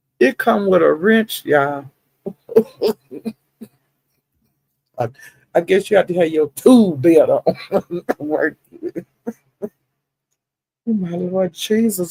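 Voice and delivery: amused, laughing through the words. Speaking to the audience as y'all, laughing while talking. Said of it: "I'm so tickled. I'm crying".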